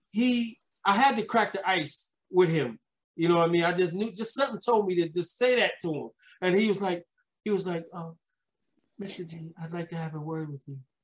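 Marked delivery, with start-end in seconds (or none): 7.9-10.7 soft, light, airy voice without bass. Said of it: "put some bass in your voice".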